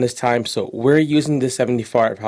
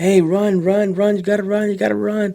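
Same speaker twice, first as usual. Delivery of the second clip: high cheering scream; 9 semitones higher than usual. Retelling how everyone screamed at a walking kid: imitating kids screaming. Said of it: "everybody's screaming for the kid".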